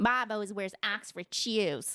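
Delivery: imitated Chicago accent. Imitating coworkers praising a colleague for a position, in a Chicago accent. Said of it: "You nailed the Chicago accent".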